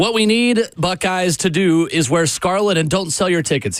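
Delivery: normal talking voice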